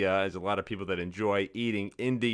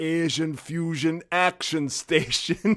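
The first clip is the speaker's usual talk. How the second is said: thick put-on Austrian accent, slow and drawn out; 8 semitones higher, 3 dB louder than usual. Retelling a ship loudspeaker announcement: imitating thick austrian accent. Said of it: "with a thick Austrian accent and say".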